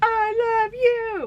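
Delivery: very high-pitched, loud screaming. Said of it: "say it like you're screaming it in Cruel Summer".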